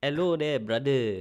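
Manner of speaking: Singapore English accent. Trying out the Singlish way of talking for the other speaker; Malay-style Singlish accent. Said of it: "I can try do it".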